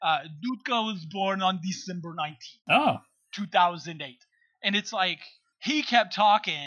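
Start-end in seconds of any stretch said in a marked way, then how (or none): 0.0-2.7 put-on thick, heavy Russian accent. Retelling what a Ukrainian government agent announced, imitating his thick Russian accent. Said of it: "he said in that thick Russian accent".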